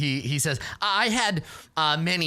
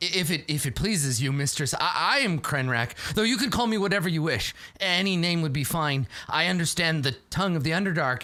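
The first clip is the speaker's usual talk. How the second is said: usual speaking voice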